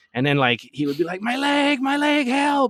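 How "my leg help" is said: mock scream, much higher, slower. Retelling a friend's sidewalk prank on a business owner; imitating a scream for help. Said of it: "lay on the sidewalk screaming".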